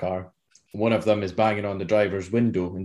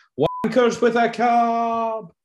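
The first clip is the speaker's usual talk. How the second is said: very high, very slow, drawn-out shout; 14 semitones higher, 3 dB louder than usual. Retelling a shout out of a car window as it pulls away: retelling a shout. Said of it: "it shouted".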